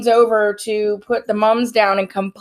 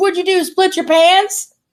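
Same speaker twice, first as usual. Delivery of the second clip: very loud, slow, pitched-up, acted-out blurt; 9 semitones higher, 4 dB louder than usual. Retelling what she asked across the funeral, imitating someone saying it really loud. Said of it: "Like, loud as hell".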